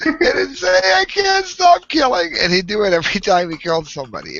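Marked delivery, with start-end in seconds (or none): 0.9-2.3 very high, loud, weepy namby-pamby whining. Retelling how a killer phoned emergency services after each killing, imitating a whiny voice. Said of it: "in this really whiny, mamby pamby voice".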